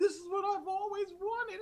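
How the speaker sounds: put-on very high, weepy, overwhelmed, tearful crying voice. Retelling how one viewer started crying: imitating a crying fan. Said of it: "one person started crying. Like".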